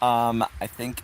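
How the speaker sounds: plain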